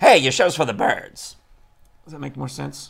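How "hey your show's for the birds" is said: put-on very loud, old-timey 1920s Transatlantic accent. Explaining an old-timey expression to the show's host, in a 1920s Atlantic accent. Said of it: "if I said it in my 1920s Atlantic accent".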